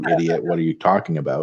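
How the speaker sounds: plain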